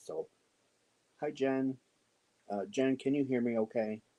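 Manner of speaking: kept-down voice. Greeting a listener while someone sleeps upstairs, in a lowered voice. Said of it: "so I got to kind of lower my voice".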